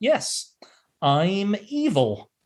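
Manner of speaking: halting, hesitant delivery. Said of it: "my favorite line delivery".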